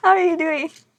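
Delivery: high, wide-ranging laughter throughout the words.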